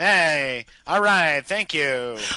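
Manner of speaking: loud, badly acted tough-guy voice. Describing how a man talks in a clip, bad Charles Bronson impression. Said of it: "talks like an awful lot like Charles Bronson".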